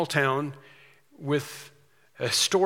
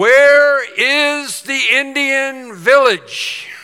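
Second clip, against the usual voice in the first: booming, very loud, high, slow, drawn-out shout; 10 semitones higher, 11 dB louder than usual. Retelling a group leader calling down a hallway, in a very loud voice. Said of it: "he said in a very loud voice".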